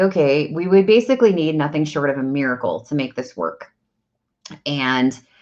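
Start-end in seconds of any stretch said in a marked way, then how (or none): none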